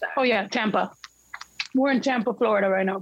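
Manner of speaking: talking with mouth full, chewing. Telling a video call where they are, chewing while talking. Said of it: "Can you hear me chewing".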